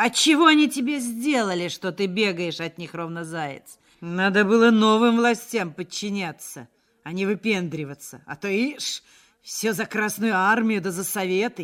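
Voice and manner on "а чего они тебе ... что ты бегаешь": ordinary delivery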